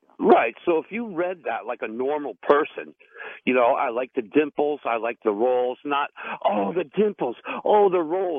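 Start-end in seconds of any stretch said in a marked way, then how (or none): 6.5-8.4 over-the-top, exaggerated mock reading voice. Showing the other speaker how their reading of an Instagram post sounded, in an exaggerated mock reading. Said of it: "it really exaggerated the way you're reading it".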